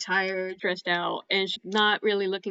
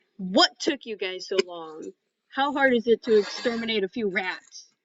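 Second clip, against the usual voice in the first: very exasperated, impatient, fed-up tone. The game master, as the tiefling Lavrali, greets the returning party, exasperated. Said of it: "very exasperated, and she asks".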